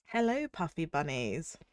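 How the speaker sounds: sultry, seductive, sick-sounding voice. Streamer greeting viewers while ill, seduction voice from being ill. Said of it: "speak in this voice all the time".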